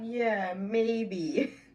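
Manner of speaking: mock, laughing, dismissive reply. Recounting the reply given to him, retelling a laughed-off reply. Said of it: "I laugh it off and I'm like".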